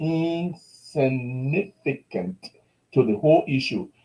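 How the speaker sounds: very slow, drawn out, each word weighed. Speaking out about the machine fire, saying it very slowly. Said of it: "I want to say that very slowly".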